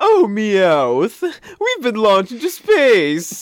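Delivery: very high sing-song cartoon villain, pitch swooping and stretched. Imagining Team Rocket launched into space, doing a James impression. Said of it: "that was a pretty good James impression".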